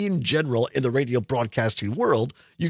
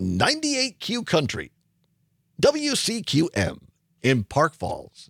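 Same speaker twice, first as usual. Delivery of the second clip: fake, put-on radio announcer voice; 3 semitones higher than usual. Listing radio stations and their towns in a fake radio announcer voice. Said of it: "That's my fake radio announcer voice".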